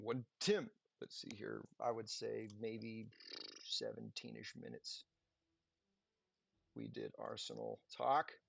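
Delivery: quiet, self-directed mumbling. Speaker working out upgrade times aloud, mumbling to himself. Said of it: "I'm mumbling to myself".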